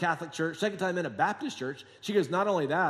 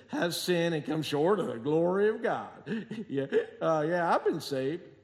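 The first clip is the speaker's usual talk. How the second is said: mock slurred speech, slower. Speaker retelling a man's replies while quoting scripture to him, imitating slurred speech. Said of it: "he's all slurring".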